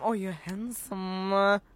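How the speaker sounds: slow, suggestive, flirty delivery.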